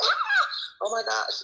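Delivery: high mock scream, squealed. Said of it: "sometimes I'm on here screaming like".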